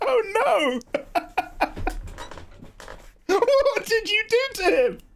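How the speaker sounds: talking through laughter. Reacting to news of a five-month relationship, laughing while talking. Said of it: "I'm not laughing at you".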